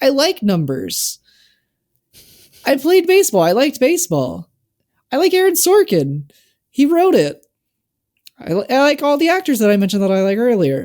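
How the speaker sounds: high, defensive voice that keeps climbing. Explaining why they like a film: high-pitched voice. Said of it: "My voice is really high right now".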